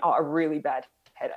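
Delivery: ordinary talk, nothing marked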